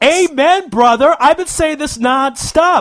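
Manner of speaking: heated, energized ranting.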